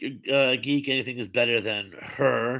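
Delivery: normal talking voice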